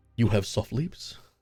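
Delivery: put-on vaguely European accent. Voicing a waking character speaking to the healer: vaguely european accent. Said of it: "in his vaguely European accent and says".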